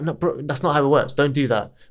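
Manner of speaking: ordinary talk, nothing marked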